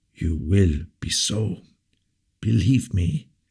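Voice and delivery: hoarse, husky, prophetic-sounding voice. Replying to his majesty's defiance, in a hoarse, prophetic voice. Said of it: "said Aramis in a hoarse, prophetic voice".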